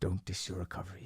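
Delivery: intense, very quiet therapist voice. Showing how his therapist really talks, imitating intense therapist. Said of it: "He talks like this. ... He's intense".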